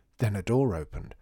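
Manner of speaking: ordinary delivery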